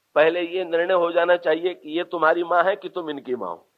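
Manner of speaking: plain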